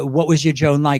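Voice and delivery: ordinary talk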